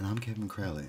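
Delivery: public radio voice. Podcast co-host introducing himself at the show's open: NPR voice. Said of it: "This is my NPR voice".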